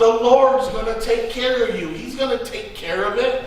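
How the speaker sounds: blunt, exasperated tone.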